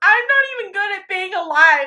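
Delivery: put-on drunk gasping voice. Retelling what a drunk friend said while gasping at magic: imitating a drunk, gasping Sunny. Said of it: "she just starts, like, gasping, and she goes".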